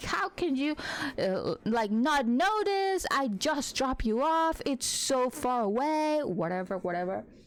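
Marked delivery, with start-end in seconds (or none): 0.0-6.2 put-on screaming outburst, pitched high. Retelling a dream where dad screams at the speaker: imitating someone screaming. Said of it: "screaming at each other".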